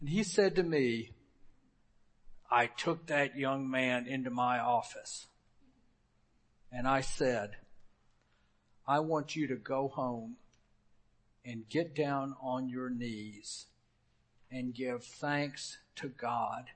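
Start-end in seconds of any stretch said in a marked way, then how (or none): 2.5-16.7 put-on deep gravelly voice, lower and quieter. Retell what he said to you after taking a young man into his office, in Dr. Walkup's deep, gravelly voice. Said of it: "Walkup's voice was deep and gravelly".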